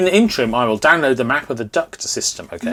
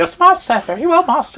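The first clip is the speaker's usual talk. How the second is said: very high-pitched house-elf voice; 14 semitones higher, 3 dB louder than usual. Voicing a card's droid character like Dobby the house elf. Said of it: "It really does sound like Dobby the house elf".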